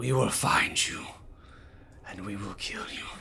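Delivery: hissing, menacing creature voice. Game narrator voicing a creature's voice calling out to the players, hissing. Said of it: "As he hisses".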